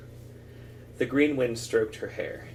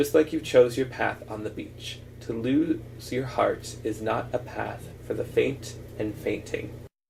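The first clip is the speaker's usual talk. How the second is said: usual speaking voice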